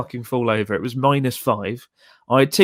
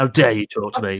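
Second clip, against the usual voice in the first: pretend grumpy, rude snapping in lower voice; 3 semitones lower than usual. Showing how a grumpy person would react to a viewer: mock grumpy snapping. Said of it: "this grumpy person where if you meet me".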